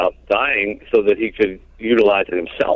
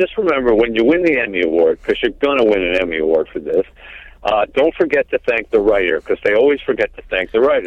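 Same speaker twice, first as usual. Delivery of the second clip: put-on, animated, playful sing-song teasing. On the phone after the movie, the speaker retells teasing him: retelling a tease. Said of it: "And I was teasing him".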